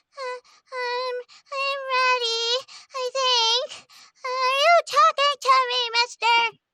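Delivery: put-on very high, very loud, slow little kid voice. Speaker retells performing a famous movie line when called up: little kid voice. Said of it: "I did like a little kid".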